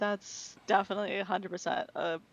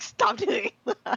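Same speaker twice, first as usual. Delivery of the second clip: shrill, very high, loud yell; 13 semitones higher, 7 dB louder than usual. Retelling yelling at a brother who chewed loudly: imitating own yell. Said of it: "I just yelled at him".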